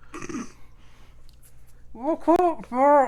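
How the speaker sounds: talking through a mouthful. Character trying to talk with a mouthful of fur, muffled. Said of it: "I had a mouthful of fur".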